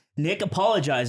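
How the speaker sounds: ordinary delivery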